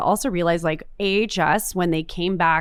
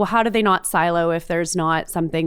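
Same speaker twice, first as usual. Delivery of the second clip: ordinary delivery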